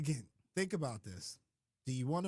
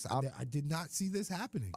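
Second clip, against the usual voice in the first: plain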